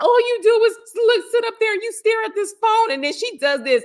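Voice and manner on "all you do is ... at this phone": mock tearful, sobbing, very high complaining voice. Retelling what a woman said to a man staring at his phone, imitating someone crying. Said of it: "She starts crying and she's like".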